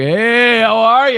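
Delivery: cheerful, slow, loud, drawn-out stoned voice. Retelling a driver's greeting after he rolls the window down: imitating a stoned cheerful guy. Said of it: "He was really, really stoned".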